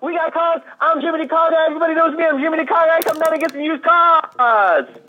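very high, hyped auctioneer-style sales pitch. Mimicking a super enthusiastic radio used-car ad guy, auctioneer-style used-car ad voice. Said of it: "Sound like an auctioneer".

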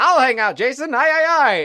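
very high, loud, squeaky cartoon voice. Joking that the robot comes in to stay: Alpha Five voice. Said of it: "Then Alpha Five comes in".

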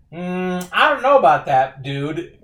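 high, loud, smug and defiant retort.

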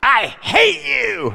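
put-on cranky old man voice, high, slow, drawn-out hateful growl.

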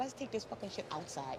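low, furious, close whisper. Retelling what was said to a uniformed worker: retelling an angry whisper. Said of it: "let me whisper something in your ear".

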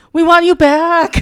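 high, loud yelling. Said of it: "you just hear one person yell".

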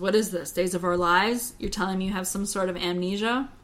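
ordinary talk, nothing marked

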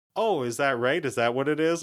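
normal talking voice

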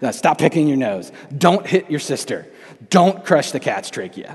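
very loud, booming, stern dad voice. Retelling what he tells his son: imitating his own dad voice. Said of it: "I'm using my dad voice for disciplinary reasons".

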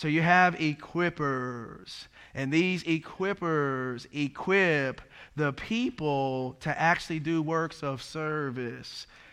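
deliberately slowed right down, drawn-out slow-motion delivery. Repeating a point to the audience so they never forget it, in slow motion. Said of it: "I'm going to say that in slow motion here".

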